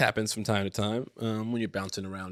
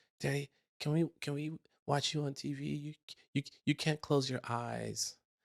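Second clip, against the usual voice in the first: put-on drowsy, half-asleep child voice, pitched up; 5 semitones higher, 5 dB quieter than usual. Retelling what a half-asleep daughter said at bedtime: imitating half-asleep Lily. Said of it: "she's just half asleep".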